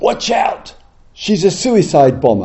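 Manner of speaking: acted-out sudden, alarmed shouting. Retelling a man on a crowded street: imitating a man shouting. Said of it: "he shouts out".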